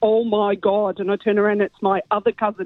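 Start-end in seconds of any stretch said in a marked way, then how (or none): 0.0-1.0 put-on speaking with a Derry accent. Retelling what the other cousin called out in the bathroom, thick Derry accent. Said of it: "in a really thick Derry accent".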